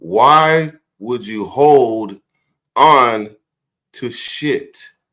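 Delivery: very slow, broken-up, deliberate, halting delivery. Repeating his question after cutting himself off: a little bit slower. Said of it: "Let me say it a little bit slower".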